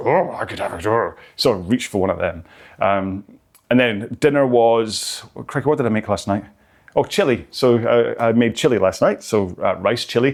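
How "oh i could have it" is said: put-on furry puppet monster character voice. Describing spotting the kids' opened chocolate biscuits, in a Cookie Monster voice. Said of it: "when the Cookie Monster comes out and goes".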